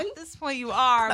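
ordinary delivery

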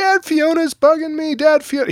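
mock very high, loud, frantic kid scream. A parent retelling his son yelling while he was driving, imitating Rad screaming. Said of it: "I just kept hearing Rad screaming, like".

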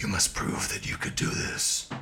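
sinister villain voice.

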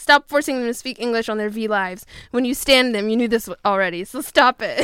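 normal talking voice

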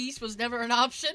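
plain

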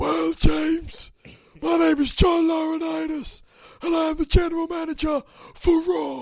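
squeaky, loud, high-pitched voice. Answering a request to do an impression: John Laurinaitis impression. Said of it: "What does John Laurinaitis sound like".

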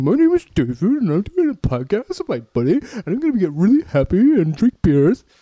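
high, swooping taunting male voice. Retelling how someone mocked the speaker in a put-on voice: mocking imitation of a man. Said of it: "she was doing her voice for me".

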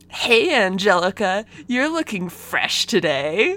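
acted, cheesy, try-hard smooth cartoon cool voice. Retelling a cartoon guy's line to a girl: imitating a try-hard cool line. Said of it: "just like that".

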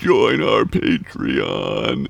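very low-pitched, raspy voice. Imitating a deep-voiced man on a podcast, in a deep Boogeyman voice. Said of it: "Thanks, Boogeyman".

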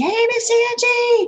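put-on childlike voice, hollering loudly. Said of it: "they holler at me".

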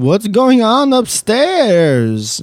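eerie, high, swooping ghost-story voice. Reading out someone's message aloud as written: spooky voice. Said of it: "Says in a spooky voice".

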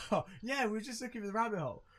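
laughing while talking. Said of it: "So I'm laughing as we're going out".

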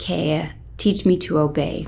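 ordinary talk

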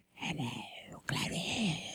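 breathy, barely voiced whisper. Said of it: "He was like, ... Like that?".

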